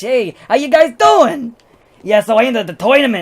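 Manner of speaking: put-on, goofy, high, loud hobgoblin accent. Player shows how they voiced their hobgoblin character, hobgoblin character voice. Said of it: "And I made him talk like this".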